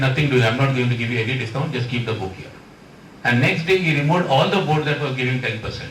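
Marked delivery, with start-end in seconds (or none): none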